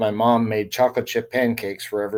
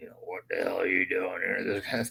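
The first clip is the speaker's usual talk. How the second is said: deep-voiced, hushed tone; 2 semitones lower, 8 dB quieter than usual. Telling a story about Dad greeting a guy who walks in, retelling Dad's deep voice. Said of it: "a couple of you know deep voice".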